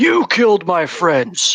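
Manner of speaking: loud, swooping, roaring bellow. Narrating a game, the speaker voices the driver's line, bellowing. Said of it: "as he bellows".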